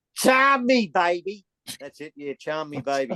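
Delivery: put-on Aussie larrikin voice. Demonstrating how to say a line, in an Aussie larrikin accent. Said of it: "That's the Aussie larrikins English".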